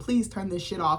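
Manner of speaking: ordinary talk, nothing marked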